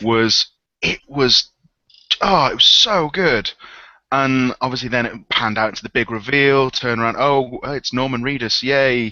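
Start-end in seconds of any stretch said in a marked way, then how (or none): 7.2-9.1 yay said with a sarcastic-sounding tone. Describing the big reveal of a game: sarcastic-sounding tone. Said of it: "that sounded really sarcastic".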